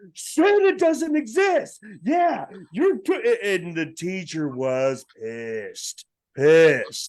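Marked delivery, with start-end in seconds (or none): 0.2-1.8 very high, shrill, top-of-the-lungs shrieking. Recalling coming into a kindergarten class, speaker is retelling a scream. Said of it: "screaming at the top of my lungs".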